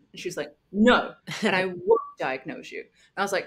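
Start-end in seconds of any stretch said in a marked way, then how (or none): 0.7-2.8 firm, quite stern, with swinging pitch. Retelling another person's reply in a conversation: imitating a stern reply. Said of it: "she kinda got quite stern".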